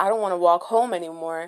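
ordinary delivery

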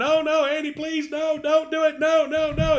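shrill, very high, drawn-out pleading scream. Retelling a stage scene where a man pleads as an axe is raised, retelling a screaming plea. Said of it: "he's screaming".

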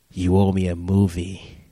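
angry, deep-pitched voice. Retelling what the listener said after slowly turning their head, deep voice. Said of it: "in this deep voice".

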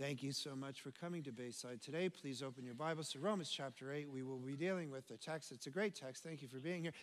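dull, level, lifeless monotone delivery. A preacher shows how he does not sound when preaching: flat monotone. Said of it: "Like I'm not like a monotone".

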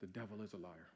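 hushed, very quiet, gentle half-whisper. Retelling what mom said on the phone: imitating mom half-whispering gently. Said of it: "my mom kinda whispered, just real gently".

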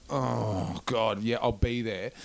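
mock drowsy, just-woken-up groggy voice. Retelling the night person's reply on the phone at 2 a.m., imitating a groggy voice. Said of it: "it's like all groggy".

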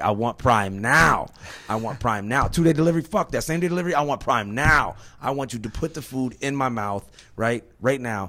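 loud, high, comedic rant. Retelling a comedy special bit, imitating Ronny Chieng. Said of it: "He's like".

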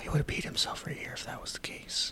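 soft, unvoiced whisper. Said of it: "Let's just whisper about him".

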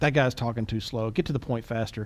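ordinary talk

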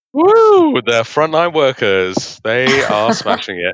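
tongue-in-cheek, loud, sing-song cheering, laid on thick. Cheering the NHS while not meaning it, facetious. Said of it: "I'm being facetious".

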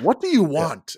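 explosive, loud, high yell receding at the end. Acting out the same line again, catching himself mid-outburst: imitating an outburst that pulls back. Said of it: "pulls back and recedes".

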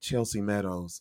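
soft, low, ingratiating dude voice.

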